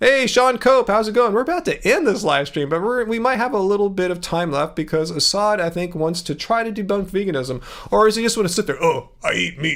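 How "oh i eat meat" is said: slow, teasing, mocking voice. Mocking a viewer who won't debunk veganism: mocking impression of a meat eater. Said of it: "was my impression good there".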